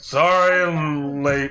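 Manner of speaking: acted drunk character voice. Veemtalk bursts through the door late, greeted by the students, drunk Veemtalk voice. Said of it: "you see Veemtalk shit-faced".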